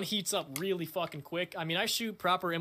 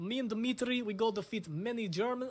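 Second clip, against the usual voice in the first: bad fake Russian accent, pitched higher; 5 semitones higher than usual. Showing off a scoped Mosin, in character: put-on Russian accent. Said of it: "I can't do the Russian accent anymore".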